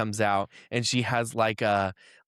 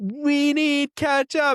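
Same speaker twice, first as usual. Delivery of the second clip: very high, loud, carrying shouted yell; 6 dB louder than usual. Retelling how a waiter called to the whole restaurant: imitating a waiter yelling. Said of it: "he yells out to the whole restaurant".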